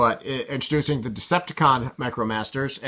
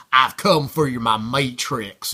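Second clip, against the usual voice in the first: thick, heavy Southern US accent; 3 dB louder than usual. Voicing Thunderwing from Matrix Quest, as Thunderwing in a Southern accent. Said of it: "speaking in a very southern accent".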